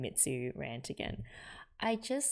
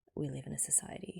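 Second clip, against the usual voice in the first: quiet, flat, beaten-down deadpan delivery; 7 dB quieter than usual. Recapping a scene, the speaker quotes Azusa's line: mimicking Azusa's deadpan, defeated voice. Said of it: "says in this deadpan, defeated voice".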